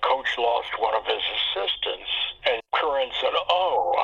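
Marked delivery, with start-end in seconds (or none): 0.0-2.1 real low, quiet voice, kept down. Retelling an alabama assistant's answer to a visiting coach, in a real low voice. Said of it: "in a real low voice".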